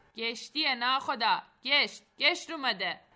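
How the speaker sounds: full-throated, loud, called-out shout. As a motorboat approaches, one of the men calls to the captain, shouting. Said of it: "صاحب داد زد".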